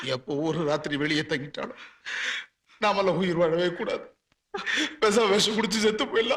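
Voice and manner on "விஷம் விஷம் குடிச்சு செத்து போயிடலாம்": crying, sobbing despair. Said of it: "நீ ஏன்டா அழுவுற?".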